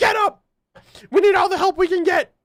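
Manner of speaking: very high, forceful, acted yell. Retelling a scene where Blake yells at Weiss: imitating Blake yelling at Weiss. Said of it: "did Blake just really yell at Weiss?".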